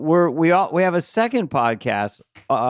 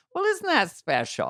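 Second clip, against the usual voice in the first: put-on voice made to sound young, pitched up; 9 semitones higher, 6 dB quieter than usual. Answering a guest who says the show makes her feel young: put-on young voice. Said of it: "I'll try to make my voice young".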